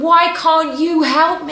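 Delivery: loud, desperate, panicked screaming. Retelling a desperate plea to her mum for help: imitating her own screaming. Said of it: "And I was screaming".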